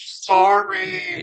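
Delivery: high mock yell like through a megaphone. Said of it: "She yells in the megaphone".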